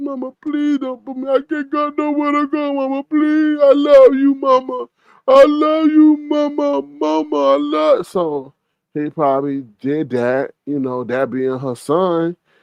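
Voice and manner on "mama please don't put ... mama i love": crying, desperate, tearful pleading, pitched way up. Retelling a son begging his mother not to put him out: imitating someone crying and begging. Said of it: "there was some crying going on".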